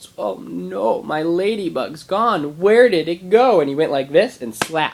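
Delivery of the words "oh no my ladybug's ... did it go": play-acted mournful child voice, high, very drawn out. Retelling how a little kid reacted to losing a ladybug: imitating a sad child. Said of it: "looks at me with this really sad face and goes".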